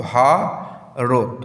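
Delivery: 'Bharat' with a pause after syllable 'ভা'. Pronunciation lesson on the word Bharat, pause after 'ভা'. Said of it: "ভাইয়ের পর থামছি, তারপর আবার যাচ্ছি".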